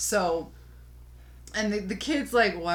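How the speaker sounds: usual speaking voice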